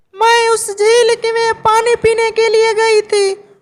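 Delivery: very high, frazzled, flustered cartoon sparrow voice. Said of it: "आज तक तो इंसानों के साथ एक पिंजरे में रहती थी। मैं किसी तरह मैं तो इंसानों की हाथ से भागी हूँ। / मैं किसी तरह मैं तो इंसानों की हाथ से भागी हूँ।".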